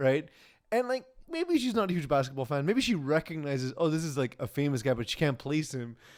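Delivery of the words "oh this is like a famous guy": usual speaking voice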